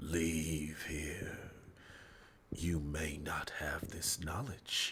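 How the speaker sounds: eerie, soft, slow, ghostly whisper.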